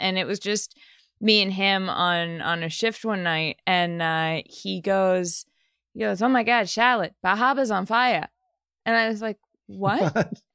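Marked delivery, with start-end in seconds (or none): 6.2-8.3 put-on heavy Boston accent with dropped r's. Retelling a night shift with the editor Roberto breaking news: imitating Roberto's Boston accent. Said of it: "he had a very thick Boston accent".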